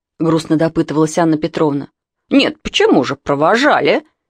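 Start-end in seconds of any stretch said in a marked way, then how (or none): 2.3-4.0 mildly aggrieved, a little offended. Narrator reads the neighbour answering Anna Petrovna, a little offended. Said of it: "немного обиженно ответила соседка".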